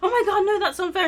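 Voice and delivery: put-on high, loud, really worked-up outburst. Retelling a clip of someone getting worked up: imitating someone getting wound up. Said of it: "she gets really wound up and she's like".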